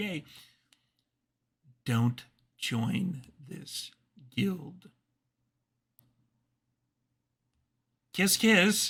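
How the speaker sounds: stage whisper, pitched high. Voicing a character who whispers in a player's ear, in a stage whisper. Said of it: "I'm going to do a stage whisper here".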